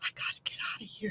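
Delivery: hushed, breathy whisper under the breath. Retelling how a dad delivering a package spoke while a dog barked: imitating a whisper. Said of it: "he whispers".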